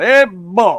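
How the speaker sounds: high, blustery cartoon rooster drawl. Telling a story about a friend, acting out how he greets people. Imitating a blustery cartoon rooster drawl. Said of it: "he sounds like Foghorn Leghorn".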